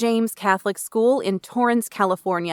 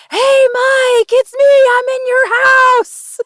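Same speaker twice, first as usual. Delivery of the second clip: shrill, full-volume, high, drawn-out yell; 10 dB louder than usual. Retelling calling out to someone across a coffee shop: imitating own past yell. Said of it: "I yelled at him".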